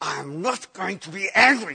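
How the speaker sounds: words forced out through clenched jaw, gritted teeth. Describing trying to be a better person, saying it through gritted teeth. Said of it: "through gritted teeth".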